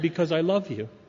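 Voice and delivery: normal talking voice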